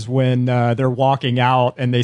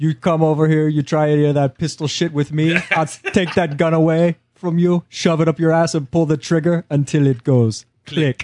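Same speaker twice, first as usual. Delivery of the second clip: put-on Brazilian accent, higher; 4 semitones higher than usual. Correcting a movie quote of the Jesus: Brazilian accent as the Jesus. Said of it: "Your accents are sound Brazilian".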